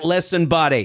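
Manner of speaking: put-on Boston accent. Trying out an accent as a Boston guy: Boston accent. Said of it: "Boston guy?".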